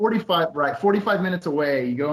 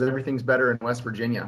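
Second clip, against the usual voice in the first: ordinary delivery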